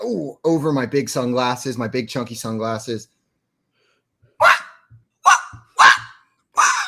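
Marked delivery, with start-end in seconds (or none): 4.4-6.7 loud, high, pushy, entitled penguin voice. Speaker acts out a penguin asking to speak to the manager, high-pitched pushy penguin voice. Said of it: "it's a little high pitched".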